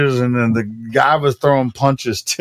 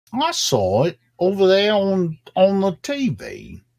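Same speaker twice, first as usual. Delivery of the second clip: invented, vaguely Australian accent, high and swooping; 6 semitones higher, 4 dB quieter than usual. Speaker tries out an accent they admit they just made up, made-up accent. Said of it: "I don't even know what accent that was".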